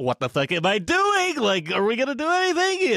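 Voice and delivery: mock frantic, very high, swooping panic. Narrating to the group as they raise their weapons, mimicking someone freaking out. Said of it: "you guys are like freaking out".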